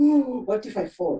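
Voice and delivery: ordinary delivery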